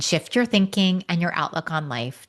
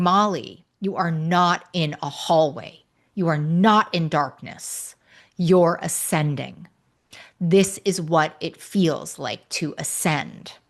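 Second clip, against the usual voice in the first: put-on commanding tone, much slower. Speaker retells what she said to Molly, retelling a commanding tone. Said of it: "she said in a very commanding tone".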